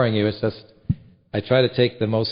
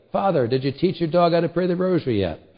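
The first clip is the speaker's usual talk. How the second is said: high, called-out yell hollered across a distance; 7 semitones higher than usual. Recalling a man in a truck beside him, the speaker retells his remark, mock-yelling. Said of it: "he yells at me".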